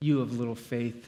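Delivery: belittling, sneering, snarky and disdainful tone. How people often read Jesus's line: mock-snarky, disdainful tone. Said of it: "like Jesus is being snarky, like he's putting them down".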